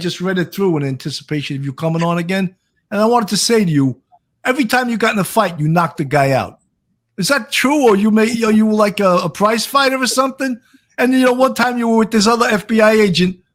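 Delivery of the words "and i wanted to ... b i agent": put-on, chatty Brooklyn New York accent. Speaker asks a returning guest about his book, in a Brooklyn accent. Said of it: "I'm talking with a Brooklyn accent now".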